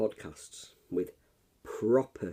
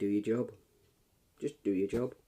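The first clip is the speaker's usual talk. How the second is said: ordinary talk, nothing marked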